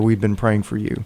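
ordinary talk, nothing marked

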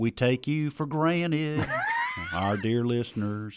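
put-on sing-song Southern country accent. Speaking to the dear listeners: mocking Southern voice. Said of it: "You sound like you're mocking Southerners".

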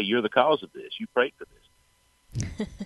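playful, joking, teasing tone. Speaker retells what they jokingly said to him, retelling a joking remark. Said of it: "jokingly say".

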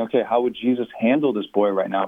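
ordinary talk

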